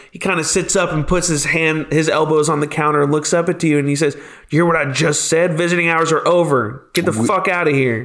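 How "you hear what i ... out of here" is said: hostile, rude, aggressive tone. Voicing a jailer who orders visitors out: hostile, rude tone. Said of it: "you watch your tone".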